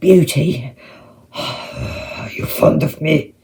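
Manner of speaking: hushed, gruff yet gentle voice. Narrator reads the kneeling creature asking Beauty: quiet rough Beast voice. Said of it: "asked her quietly in his rough voice".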